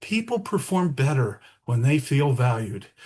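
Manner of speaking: calm, gentle, soothing delivery. Imitating a colleague's gentle, calm way of speaking: imitating Tim's gentle calm voice. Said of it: "Tim speaks so gently, so calmly".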